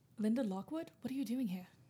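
put-on British accent. Addressing the news reporter Linda Lockwood in the story, in a British accent. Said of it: "I wish I could cut my British accent".

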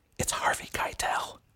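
quiet, hushed whisper. Leaning in at a table, the person two feet away, in a quiet whisper. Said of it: "I quietly whispered".

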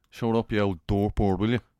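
put-on Dublin accent. Explaining the slang word dirtbird with an example line, Dublin accent. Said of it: "that's not a bad Dublin accent".

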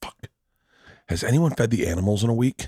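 suddenly blurted character voice. Acting out a family scene at the other speaker's funeral: imitating George Riley at a funeral. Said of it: "this is my impression of me and George Riley at your funeral".

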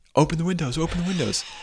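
mock frantic shouting, very high and very loud. Retelling how a student yelled from the back, imitating frantic loud yelling. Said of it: "very loud and very like frantic".

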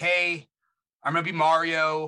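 mock near-lifeless voice. Retelling a video of Chris Pratt, imitating him half dead. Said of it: "half dead, and he's just like".

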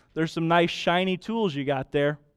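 heavily sarcastic tone. Retelling what a friend says on seeing a tool bench: imitating a sarcastic friend. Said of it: "in a very sarcastic way with a smirk".

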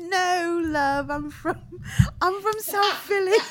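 put-on English accent, slowed down and drawn out. Joking about meeting a celebrity, answering in a put-on English accent. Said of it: "put on the, the English out-, a-, accent".

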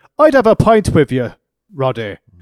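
booming, belted-out, bad Irish brogue. Recapping a segment where Sheamus comes out to Roddy, bad Sheamus Irish accent. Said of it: "Bad accent".

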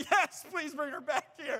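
worked-up and tearful, high and loud. Retelling answering a nurse after a blood draw: imitating own tearful, worked-up voice. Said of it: "I'm so worked up".

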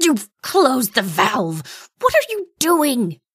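high-pitched, sputtering, dazed, disoriented delivery. A narrator reads the wounded majordomo's outburst, sputtering the words. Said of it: "He sputtered the words".

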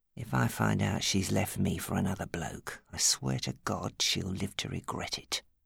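low, quiet murmur under the breath. A man speaks to the manageress of his club, murmured. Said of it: "Steve murmured".

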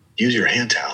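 mock loving, graceful, gentle voice. Retelling a class where the instructor comes by, imitating a loving, graceful voice. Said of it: "in this loving, graceful voice is like".

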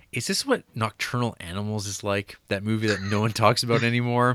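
ordinary delivery

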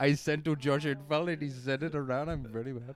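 loud mock comic Indian accent.

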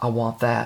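imitated mutter under the breath. Retelling a movie scene where a lady leans to her husband: imitating a mutter under her breath. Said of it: "kind of under her breath".

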